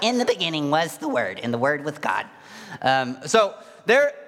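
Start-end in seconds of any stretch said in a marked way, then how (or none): 0.0-2.3 sped-up cartoon voice. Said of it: "sounded a lot like Larry the Cucumber".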